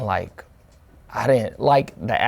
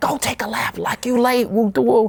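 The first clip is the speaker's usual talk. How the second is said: high-pitched screaming in a coach voice. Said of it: "he's screaming at me".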